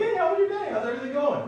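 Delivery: very high, loud, chipper delivery. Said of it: "Mister Rich is all chipper".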